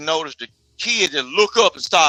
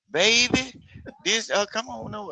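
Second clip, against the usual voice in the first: gentle, soft, slow, hushed stage whisper; 6 semitones higher, 6 dB quieter than usual. Imitating how women of the past spoke to a child: imitating a soft half-whisper. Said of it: "them women used to whisper to you".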